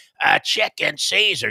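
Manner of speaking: gruff New York voice. Retelling the lady's reply to his order at an italian restaurant: imitating the lady's new york attitude. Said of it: "like a New York attitude".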